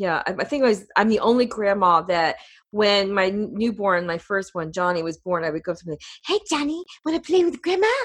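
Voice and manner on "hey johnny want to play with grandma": very high, quick, creepy clown voice. A grandmother greets her newborn grandson Johnny, doing a Pennywise voice. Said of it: "I sound like Pennywise".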